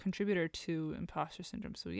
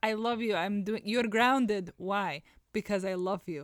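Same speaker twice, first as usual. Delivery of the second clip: put-on Russian accent, much higher and louder; 3 semitones higher, 8 dB louder than usual. Describing how parents always talk, imitating parents in Russian accent. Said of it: "Are your parents Russian as well?".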